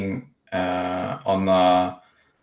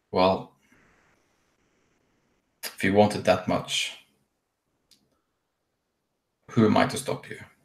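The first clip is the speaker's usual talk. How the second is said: close, hushed, soft whisper. Retelling what she whispers in your ear during a hug, whispering in the ear. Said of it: "she whispers uh, in your ear".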